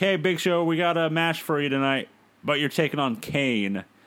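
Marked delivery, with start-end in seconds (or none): none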